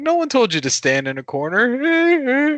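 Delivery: exasperated.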